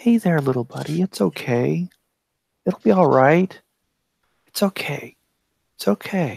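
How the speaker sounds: gentle, soothing, calming tones. In a tabletop game, player calms a hurt little creature, soothing like to a newborn kitten. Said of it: "I make soothing noises at it, like I'm talking to a newborn kitten".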